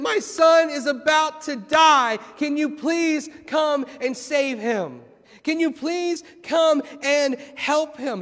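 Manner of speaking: mock desperate, pleading begging tone. Acting out a man begging Jesus to save his son, imitating desperate begging. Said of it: "he is begging and pleading with Jesus".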